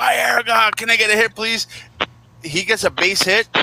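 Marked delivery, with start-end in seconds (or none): 0.0-1.7 high, loud, play-acted screaming. A mets fan on camera retells his own reaction to a player: retelling own screaming at player. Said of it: "I'm just like screaming at this guy".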